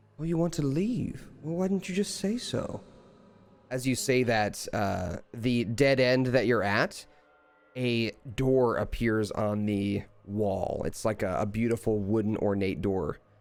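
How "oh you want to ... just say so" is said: very high, disembodied creature voice from overhead. Voicing a creature that speaks from above to the players: voice of an unseen creature from above. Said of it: "familiar voice from above say".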